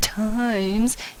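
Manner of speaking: odd put-on voice, drawn out on times. Math lesson, reading out an expression: weird voice on times. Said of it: "I said times in that weird voice".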